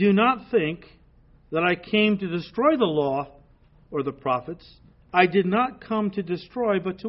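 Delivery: ordinary delivery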